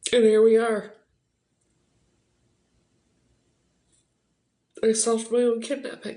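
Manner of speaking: crying while talking. Saying the own kidnapping is solved, crying while talking. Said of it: "And I can't stop crying".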